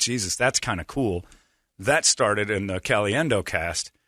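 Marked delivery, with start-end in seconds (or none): none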